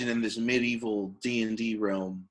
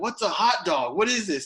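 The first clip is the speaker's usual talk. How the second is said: higher-pitched, put-on New York accent; 8 semitones higher than usual. Retelling a blacksmith character's reply from a game: put-on new york accent. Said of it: "he talked in a New York ac-, accent".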